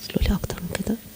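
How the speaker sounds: soft, whispered aside.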